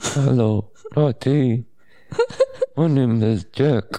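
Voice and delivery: computer-like voice spoken on an inward breath. Introducing oneself on the Humor Experiment podcast in a Stephen Hawking voice. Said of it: "Stephen Hawking voice".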